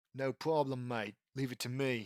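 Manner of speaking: put-on plain, straightforward Australian accent. Narrator voicing the character's reply, in Manitoba Smith's Australian accent. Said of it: "says Manitoba Smith in an Australian accent".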